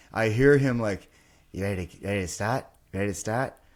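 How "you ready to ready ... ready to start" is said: put-on Australian accent. Retelling what the sound engineer said before the show: imitating an Australian accent. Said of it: "In his Australian accent".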